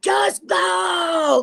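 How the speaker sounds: very high, enraged, furious scream, drawn out. Retelling how a fifteen-year-old told them to go: retelling a furious scream. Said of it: "veins coming out of her neck and spit".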